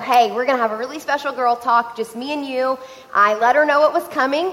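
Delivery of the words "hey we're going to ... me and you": ordinary talk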